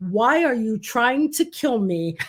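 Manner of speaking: usual speaking voice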